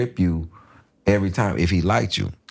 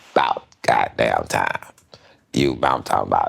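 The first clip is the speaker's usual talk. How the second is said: rough, scratchy, creaky voice; 11 semitones lower than usual. Retelling what a comic said after sets, doing Rodney's voice. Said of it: "this was Rodney".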